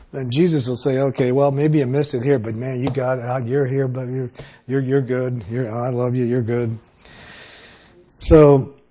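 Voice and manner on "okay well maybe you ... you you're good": plain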